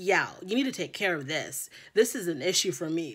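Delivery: put-on deadpan serious voice. Retelling what she told him: imitating a deadpan serious tone. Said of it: "deadpan serious about the tooting".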